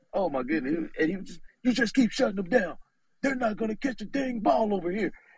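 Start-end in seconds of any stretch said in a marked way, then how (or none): 1.6-5.0 rough, forceful, strong, raspy delivery. Retell how the coach answered his players, in Coach Stu's strong, raspy voice. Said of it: "He got this strong, raspy voice".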